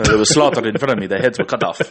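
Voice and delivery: steady Russian accent throughout. Trying a made-up accent after being told to try: put-on Afro-Russian accent. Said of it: "Is that Russian?".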